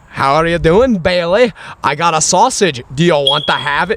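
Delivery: put-on Scottish woman's accent. Describing a clip of a little girl offering her dog a sausage, in a Scottish lady accent. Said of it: "Scottish lady accent's pretty fucking dope".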